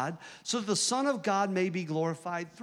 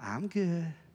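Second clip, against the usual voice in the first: put-on voice, quiet and sweet; 2 semitones lower, 3 dB quieter than usual. Retelling a phone call with mama: imitating mom, quiet and sweet. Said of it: "she's just real quiet and real sweet".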